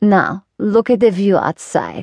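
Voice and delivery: firm, resolute, swooping delivery. A woman gives the narrator an instruction, firm. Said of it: "she said firmly".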